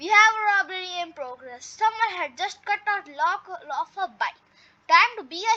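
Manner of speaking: plain reading voice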